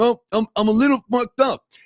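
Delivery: put-on teddy bear voice with numb mouth. Retelling a movie scene after the bear is patched up: Ted with a numb mouth. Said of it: "his mouth is all numb and stuff".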